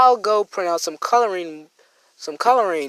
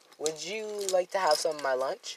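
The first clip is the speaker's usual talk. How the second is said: mock very soft, gentle, friendly tone; 10 dB quieter than usual. Narrating a story, voicing one character's offer to another: nice tone voice. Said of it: "in a nice tone voice".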